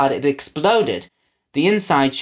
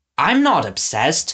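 argumentative, arguing tone. Winnie replies to a man lecturing her, arguing. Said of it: "she argued".

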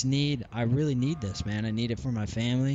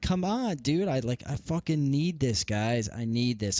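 pleading, begging tone. Retelling how the director was begged after being cut: imitating own pleading. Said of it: "I'm trying to plead with him".

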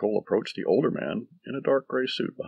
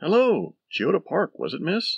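cheery, friendly, bright, high sing-song voice; 10 semitones higher, 6 dB louder than usual. A cab driver greets his passenger as she gets in: cheerful. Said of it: "The driver cheerfully asked".

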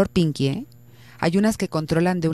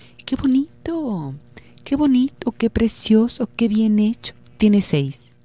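sugary, sweet, high little voice; 5 semitones higher than usual. Retelling how the teacher graded a drawing: imitating teacher's sweet little voice. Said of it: "con una vocecita así más o menos, toda dulce".

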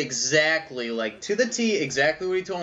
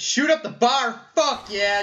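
whooping, high, pumped-up excited yelling; 7 semitones higher than usual. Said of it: "I don't know why we're yelling".

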